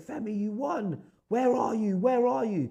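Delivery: mock very high, wild, drawn-out screaming. Retelling a phone call on loudspeaker: imitating people screaming. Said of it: "everyone's screaming, saying".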